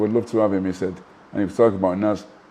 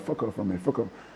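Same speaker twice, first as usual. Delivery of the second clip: put-on muttering under breath, quieter; 10 dB quieter than usual. Retelling a rival's reply to taunting: imitating someone muttering under breath. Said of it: "he's saying under his breath now".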